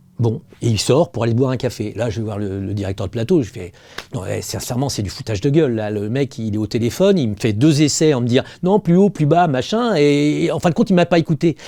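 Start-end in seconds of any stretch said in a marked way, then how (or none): none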